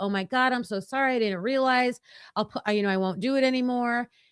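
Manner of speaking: put-on profusely apologetic tone. Retelling apologizing to a screaming neighbor: imitating profuse apology. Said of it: "I apologized profusely".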